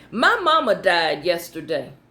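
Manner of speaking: ordinary talk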